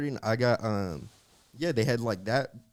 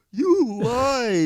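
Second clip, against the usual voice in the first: very high, very loud bawling wail, "lied" drawn out; 13 semitones higher, 8 dB louder than usual. Retelling being left at preschool as a child: imitating own childhood crying. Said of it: "When you're crying when they leave".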